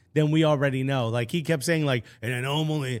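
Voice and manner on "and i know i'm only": imitated raspy voice. Quoting a speaker from a tactics video: imitating his raspy voice. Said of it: "that raspy voice".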